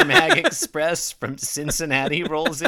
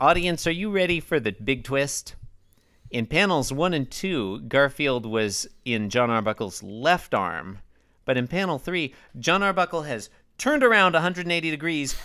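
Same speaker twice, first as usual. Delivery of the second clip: ordinary talk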